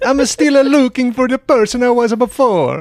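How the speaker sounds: very high-pitched, loud, put-on Italian accent. Reading a passage aloud on request, in an Italian accent. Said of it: "Can you please read it in an Italian accent?".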